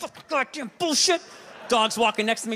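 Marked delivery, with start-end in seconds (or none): 0.0-1.2 put-on, pitched-up angry burst of swearing. Retelling limping down the street with a sore foot, imitating own angry cursing. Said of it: "I got, like, Tourette's".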